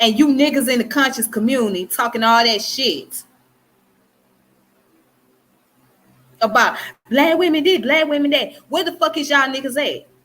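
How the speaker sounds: furious, hurt, heated, angry calling out. Calling out men in the conscious community, angry. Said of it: "you can tell in my voice I'm angry".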